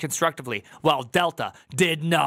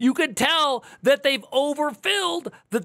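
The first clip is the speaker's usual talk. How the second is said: voice cracking mid-sentence; 11 semitones higher than usual. Speaker talking about Delta and CrowdStrike, voice cracking. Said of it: "my voice is cracking!".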